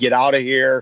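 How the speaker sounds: ordinary delivery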